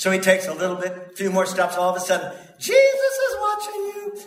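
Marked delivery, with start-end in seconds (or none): 2.6-4.2 very high parrot voice crying out. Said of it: "a voice cries out".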